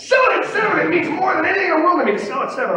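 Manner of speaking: play-acted shrill, high screaming trader's voice. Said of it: "And I'm screaming it and screaming it".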